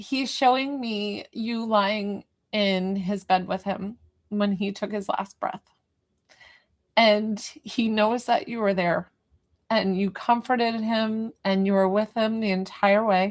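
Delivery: slow, emotional delivery, on the verge of tears. Speaker relays to a mother what her son is showing them, emotional. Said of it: "He's making me emotional".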